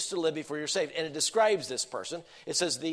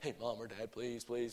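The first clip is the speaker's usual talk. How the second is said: mock begging voice, much quieter; 6 semitones lower, 13 dB quieter than usual. Recalling begging Mom or Dad for a toy before Christmas: retelling childhood begging. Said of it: "I was begging".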